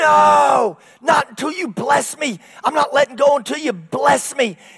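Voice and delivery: mock straining, pained voice, loud and high. Retelling a man wrestling an angel and refusing to let go, acting out pained struggling. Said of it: "he's in pain and he's hurting and he's struggling".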